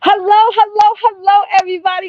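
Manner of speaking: bursting, very loud, high-pitched excited voice. Greeting everybody watching the stream, loud, extra excited. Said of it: "sorry, I'm so loud".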